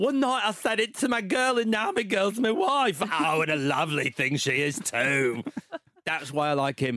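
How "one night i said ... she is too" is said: put-on London cockney accent. Speaker quotes a guy who sounds like the Mary Poppins guy, doing an impression. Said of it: "We got an impression out of him".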